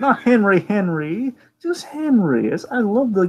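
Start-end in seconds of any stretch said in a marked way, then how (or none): 0.0-2.5 slow, gently drawn Southern belle drawl. Quoting an actress's line from a parody: imitating Nicole Stone's Southern belle accent. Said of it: "she has this great Southern belle".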